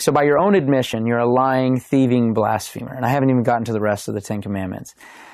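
ordinary talk

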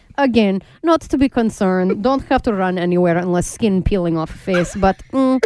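mock Russian accent, newscaster-style delivery. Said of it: "you do the Russian accent".

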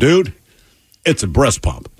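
plain

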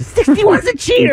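very high-pitched voice, pitched way up. Retelling what a guy kept saying during a game, high-pitched voice. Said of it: "has this high-pitched voice".

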